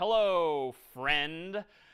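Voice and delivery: sarcastic delivery. Showing an example line to print in a program: sarcastic tone. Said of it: "maybe I'm being a little sarcastic here".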